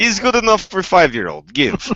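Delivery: put-on Russian accent. Imitating how Russians approve a weapon program: Russian accent. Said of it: "That was a good accent".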